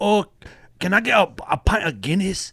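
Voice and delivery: put-on Chinese accent. Suggesting how to talk, demonstrating a Chinese accent. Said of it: "do Chinese accent. And you're like".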